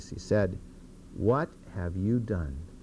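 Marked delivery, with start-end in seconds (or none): 1.2-2.6 put-on, very low, disappointed, let-down tone. Speaker retells Samuel questioning Saul, retelling a disappointed tone. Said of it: "with a very disappointed tone in his voice".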